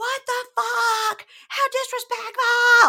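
shrill, very loud, high, drawn-out scream. Retelling a fight broken up by security, imitating a woman screaming. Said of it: "Like screaming".

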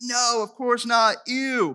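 acted, high, drawn-out grossed-out disgusted protest. Retelling how a crowd reacted to an offer: imitating a disgusted crowd freaking out. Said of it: "everyone's freaking out".

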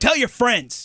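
aggressive forceful voice. A host signing off to listeners, very aggressively. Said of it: "I said it very aggressively".

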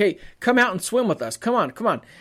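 put-on eager, pleading tone like a begging kid. Retelling how a friend begged him to come swim: imitating a kid begging. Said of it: "begging me like a dad, like a kid would to his dad".

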